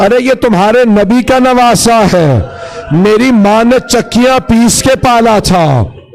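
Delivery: desperate high pleading cry.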